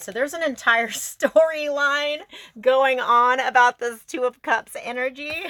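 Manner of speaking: talking through laughter, high and loud. Describing a spread of tarot cards aloud, laughing while talking. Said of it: "I'm sorry, I'm laughing".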